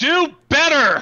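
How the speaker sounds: high, loud hollering.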